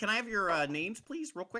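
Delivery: small, high-pitched little goblin voice. Voicing a goblin receptionist greeting visitors: goblin receptionist voice. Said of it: "she's a little goblin".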